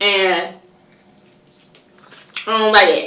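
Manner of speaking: put-on Atlanta accent, slow and drawn out. Complaining about kids raising themselves: put-on Atlanta accent. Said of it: "In my Atlanta voice".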